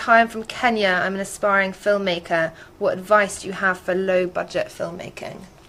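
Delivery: ordinary delivery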